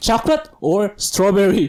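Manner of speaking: acted hostile, mean, aggressive tone. Retelling how a woman asked him a question, mimicking a mean, aggressive tone. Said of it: "in this really mean, aggressive".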